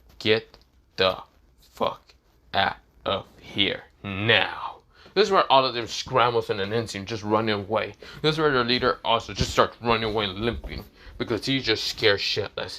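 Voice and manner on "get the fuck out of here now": dead-serious, flat monotone, very slow. Recapping a scene where a character orders the guys out, imitating Issei's emotionless serious tone. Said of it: "in the most serious emotion tone voice".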